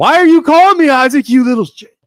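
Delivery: shrill, very loud, full-blast screaming rant. Retelling how Joe answers a phone call: imitating someone screaming. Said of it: "He just screams at me".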